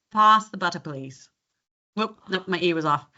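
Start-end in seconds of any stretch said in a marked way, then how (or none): 0.2-1.3 plain everyday Australian accent. Showing a learner how it should sound, say it in an Australian accent. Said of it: "so for you, Australian now".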